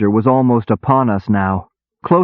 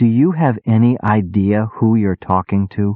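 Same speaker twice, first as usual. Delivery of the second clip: soft, quiet voice. Reading a story, narrator confronting a soldier: soft voice. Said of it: "in a surprisingly soft voice".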